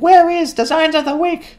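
squeaky, very high, silly put-on comic voice. Reading out a viewer's comment in a made-up voice: funny put-on voice. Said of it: "I just made it sound funny".

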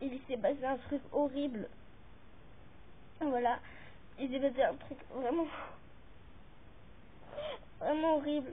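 tearful, crying voice. YouTuber speaking to viewers in a video, crying. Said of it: "je pleure, je vous jure, j'ai les larmes aux yeux".

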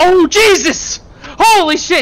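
high, stretched-out scream, very slow. Streamer in a game as everything catches fire, screaming. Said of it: "I screamed too loud".

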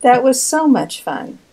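sarcastic voice. Recalling painting all the casters for someone: sarcastic tone. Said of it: "I feel like I hear sarcasm in that".

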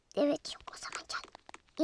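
sneaky, soft, hushed whisper.

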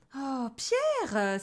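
outraged, indignant exclamation. The little family reacts to pierre with an indignant exclamation. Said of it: "s'exclama la petite famille indignée".

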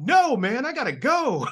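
very high, very loud, drawn-out shout. Retelling how a famous guest answered a photo request: imitating someone shouting. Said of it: "He just shouts at me".

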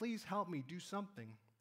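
ordinary talk, nothing marked

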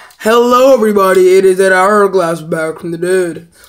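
scornful, contemptuous take on the delivery. Quoting Dead Hourglass's intro to make fun of him: imitating Dead Hourglass. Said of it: "making fun of Dead Hourglass".

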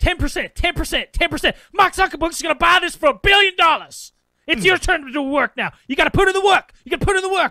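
put-on man's scream. Retelling how he screamed at them, imitating his screaming. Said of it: "As he's screaming at us".

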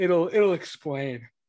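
speaking through a yawn. Speaker chatting with Jim about a story's backstory, yawning mid-sentence. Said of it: "Excuse me, yawning".

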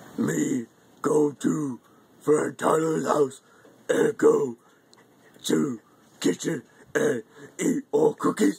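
put-on greedy, hungry monster puppet voice. Doing a Cookie Monster impression for a video. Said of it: "Cookie Monster Impression".

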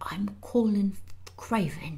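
hushed, soft, under-the-breath whisper. A boy in bed, surprised to see Mary, answers her at last, whispered. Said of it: "he whispered at last".

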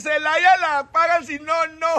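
high, loud, slow drawn-out hawker's shout.

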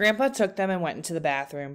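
ordinary delivery

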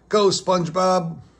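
high cheering voice. Patrick calls to spongebob as he gets ready to bat, cheering. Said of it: "Patrick cheered".

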